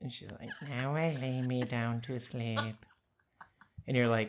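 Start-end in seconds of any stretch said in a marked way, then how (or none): 0.7-2.7 slow, eerie, creepy horror-trailer half-whisper. Imitating a girl on a swing in a horror trailer: half-whispering a creepy prayer. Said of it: "Whispering it".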